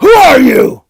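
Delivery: loud, shrill, high, menacing, intimidating voice. Confronting strangers who look like them: sounded like Batman. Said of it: "You totally sounded like Batman just now".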